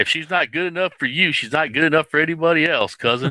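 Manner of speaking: put-on hillbilly voice.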